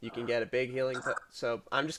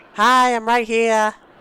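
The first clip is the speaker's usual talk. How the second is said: put-on very high, loud small-child voice; 10 semitones higher, 14 dB louder than usual. A shopper at a store counter hears someone they can't see; small child voice. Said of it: "you see a small child".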